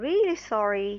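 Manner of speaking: 'really sorry' stressed with falling intonation. Speaker demonstrating sentence stress patterns, stress on 'really sorry', falling. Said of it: "the intonation goes down".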